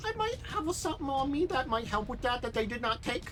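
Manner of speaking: high-pitched big-guy voice. Describing a bulky character and quoting him, in his high-pitched voice. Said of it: "he's kind of got like a high pitched voice".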